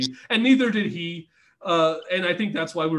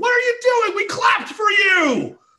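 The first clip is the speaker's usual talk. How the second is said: very high, loud, shrill outraged scream; 7 dB louder than usual. Retelling a friend screaming at a wrestler in a quiet arena: imitating Andy screaming. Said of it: "And Andy just screams".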